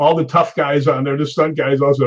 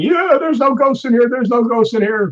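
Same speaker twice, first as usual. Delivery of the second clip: put-on cocky, high, defiant yell; 9 semitones higher than usual. Retelling a ghost story, quoting the little brother: imitating someone yelling. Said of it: "he's yelling".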